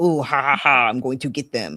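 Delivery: put-on villainous glee, cackling, malicious gloating laugh. Imitating an employee filing for unemployment: mock malicious gloating. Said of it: "put down my client's company maliciously".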